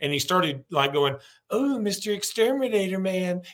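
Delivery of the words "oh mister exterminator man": very slow, high, put-on old Southern lady voice. Retelling how a man started talking after feeling emasculated: old southern woman voice. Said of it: "start talking like an old Southern woman".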